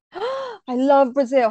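slow, drawn-out, excited gasp. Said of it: "I'm so excited".

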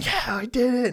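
play-acted shrill, very high, joyful, triumphant scream. Retelling jumping up on learning of the draft pool: retelling a joyful scream. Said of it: "just jumping up, screaming".

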